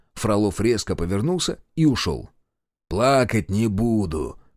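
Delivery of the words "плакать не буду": teasing, mocking tone. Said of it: "передразнил Решетов".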